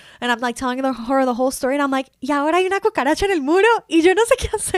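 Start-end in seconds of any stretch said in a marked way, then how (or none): 2.2-4.8 put-on frantic, high, panicked freaking-out. Retelling calling her mom about a roach in the suite, acting out own panicked meltdown. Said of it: "I'm freaking out because I'm terrified".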